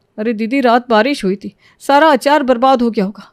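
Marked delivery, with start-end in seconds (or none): none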